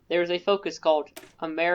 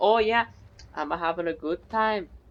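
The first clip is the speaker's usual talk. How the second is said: put-on casual Scottish man's voice with Scottish accent. Imagining a Scottish dude who showed up with a Lee Enfield, Scottish accent. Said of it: "he was probably like some like one Scottish dude".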